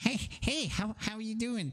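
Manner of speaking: high-pitched, creature-like goblin voice. Asked how the two goblins sound, voice their greeting in a creaturey goblin voice. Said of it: "Like a kind of like creaturey voice".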